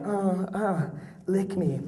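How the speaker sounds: half-whispered very slowly and close, drawn out. Retelling what a woman half-whispered into someone's ear, acting out a half-whisper. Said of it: "she like whispers something into your ears like".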